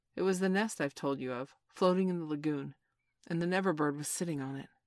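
ordinary delivery

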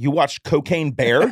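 loud carrying call. Retelling what the first wife said around the corner: imitating a really loud voice. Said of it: "say in a really loud voice".

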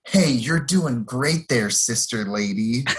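mock condescending, patronizing tone. Speaker recaps Stephanie taunting Alex, mock-condescending. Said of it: "she condescendingly says to Alex".

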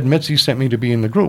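ordinary talk

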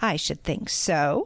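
usual speaking voice

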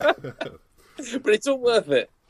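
high, slow, laughing delivery.

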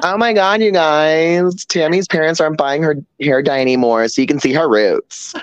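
high cartoon voice, stretched guys. Quoting the Bob's Burgers character Jocelyn: Jocelyn from Bob's Burgers voice. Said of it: "She even talks like her".

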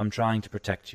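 soft-spoken, hushed voice. Game master narrating a scene, voicing a voice the player hears, in a soft voice. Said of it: "you just hear a soft voice".

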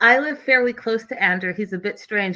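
normal talking voice

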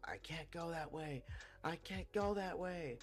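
put-on yelling. Speaker acts out a girl yelling at them near a church parking lot, retelling a yell. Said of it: "she starts yelling at me".

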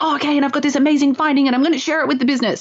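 fast excited build-up. Coaching how to share an amazing finding with the business, fast excited delivery. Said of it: "get a little bit faster when you're trying to create that excited energy".

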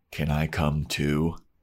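eerie, unsettling, intense creepy delivery. Recapping a scene where Xander puts down his pool stick, imitating Xander's creepy tone. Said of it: "in the most creepy way possible goes".

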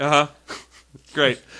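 put-on disdainful voice. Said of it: "a [name] level of disdain in his response".

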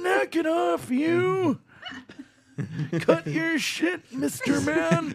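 put-on very old man voice. Speaker who can't do Bane offers something else instead: old man voice. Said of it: "I can do a really good old man".

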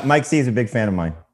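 heavy, dripping sarcasm in a high voice. Answering a question about a new friend, dripping with sarcasm. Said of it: "it's dripping with sarcasm".

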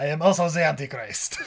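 put-on Russian accent. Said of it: "Nikolai from Left Behind Two".

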